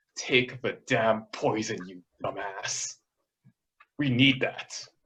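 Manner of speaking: hushed, half-whispered under the breath. A character casts a message spell to an ally, half-whispering. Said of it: "he casts message to Gilhana and whispers".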